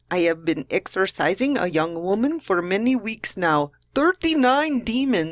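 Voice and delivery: put-on Filipino English accent. Reading aloud a priest's quoted Facebook post: put-on Filipino accent. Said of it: "that's a Filipino accent".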